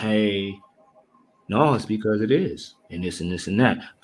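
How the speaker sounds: mock too-calm, very low, flat monotone. Describing someone who argues too calmly, the speaker imitates his calm monotone. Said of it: "a monotoned point of, of approach. He's too calm".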